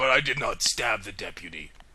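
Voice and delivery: deep, drawn-out, slow put-on English accent. Riffing on a Simpsons reference, a player speaks in a deep English accent. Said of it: "just a deep English".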